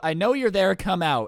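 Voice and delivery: normal talking voice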